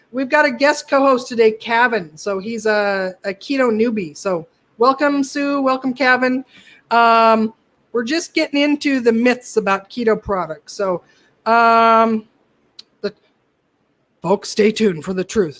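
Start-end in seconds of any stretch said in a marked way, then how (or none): 13.0-15.6 irrationally furious tone. Performing a voice the co-host asked for: Alex Jones voice. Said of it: "get your Alex Jones voice on".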